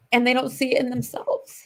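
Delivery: emotional, pitch rising. Sharing stories that get to her, getting emotional. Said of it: "I'm getting emotional".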